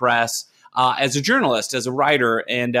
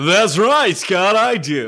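smooth, higher-pitched radio announcer voice; 6 semitones higher, 3 dB louder than usual. Answering the interviewer's question about a radio background; radio voice. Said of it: "that's my radio voice".

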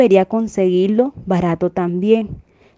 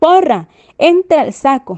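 high, shouted and called out; 7 semitones higher, 4 dB louder than usual. Narrator reads a character's command in the tale, shouted. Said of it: "Entonces él gritó".

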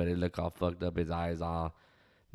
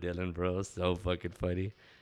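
usual speaking voice

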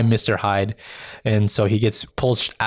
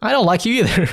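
mocking, salty, very high-pitched tone; 11 semitones higher than usual. Retelling a scene where a villain answers angrily: imitating someone salty.

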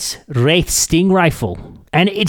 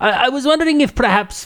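put-on Russian accent, pitched higher; 8 semitones higher than usual. Roleplaying someone at a gun shop, slipping back into a Russian accent. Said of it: "I'm doing it again".

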